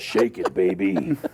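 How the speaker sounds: deep hero voice. Keeping up the voice on request: Duke Nukem as Batman voice. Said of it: "It's good. Keep going".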